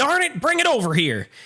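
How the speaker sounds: put-on country bumpkin voice. Retelling a scene, imitating the old guy as a country bumpkin. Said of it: "He's the country bumpkin".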